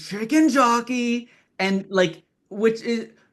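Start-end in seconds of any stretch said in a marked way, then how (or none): 0.0-1.3 wild screamed shout, high-pitched. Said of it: "him screaming".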